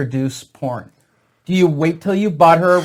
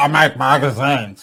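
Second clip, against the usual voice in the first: put-on slurred voice; 3 semitones lower than usual. Saying a line as Larry Flint, in his stroke voice. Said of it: "I'll do it in his voice".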